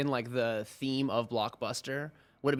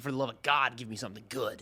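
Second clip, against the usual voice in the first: mock exasperated, frustrated angry outburst. Retelling going back to return a boring movie: acting out exasperated anger. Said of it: "You're so mad at this movie".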